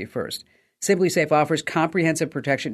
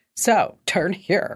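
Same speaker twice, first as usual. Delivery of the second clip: sassy cat voice with attitude; 3 semitones higher than usual. Retelling how a navigation app's cat voice option sounded: imitating cat navigation voice with attitude. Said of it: "just a little bit of an attitude".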